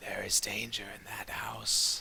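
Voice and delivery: put-on rough, raspy, gravelly old elf voice. Narrator voicing an old wrinkly elf straightening up from a crouch, raspy gravelly voice. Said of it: "speaks with a with a raspy kind of gravelly voice and says".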